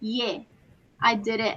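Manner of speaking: acted, very quiet, low, hushed straight-faced deadpan. Retelling a player's calm admission: imitating a straight-faced reply. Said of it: "He's straight-faced".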